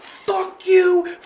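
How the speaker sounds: imitated high scream. Retelling how a woman in a parking lot screamed at some men: imitating a woman screaming. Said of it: "this lady is screaming at the guys".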